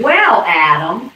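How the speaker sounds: very loud, high, squeaky little voice. Imitating a kid calling a parent by first name: little squeaky voice. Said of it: "almost like a little squeaky voice".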